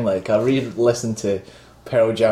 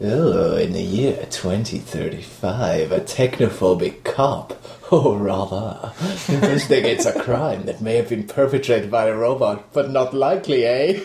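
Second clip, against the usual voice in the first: oily, shady spiv character voice. Asked by the host to read the film synopsis in the Sonny impression. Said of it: "do the synopsis as that".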